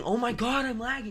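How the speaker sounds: put-on, high-pitched screeching outburst. Retelling how a player screamed whenever she died: imitating someone screaming. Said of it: "just screaming".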